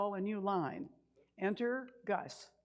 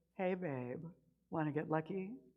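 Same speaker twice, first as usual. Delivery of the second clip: put-on sultry, seductive voice, lower pitch; 4 semitones lower than usual. Retelling recording a message for a Valentine's card, in a put-on sultry voice. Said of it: "In my best sultry voice".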